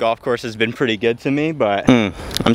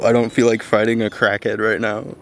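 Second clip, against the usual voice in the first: ordinary talk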